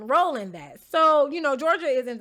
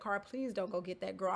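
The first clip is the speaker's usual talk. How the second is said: very quiet, hushed half-whisper, barely audible; 5 semitones lower, 13 dB quieter than usual. Retelling begging a friend not to fetch someone: retelling a half-whisper. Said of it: "I'm trying to whisper to Cara".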